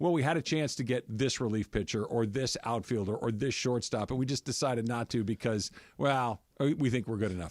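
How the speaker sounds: ordinary delivery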